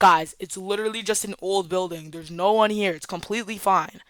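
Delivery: plain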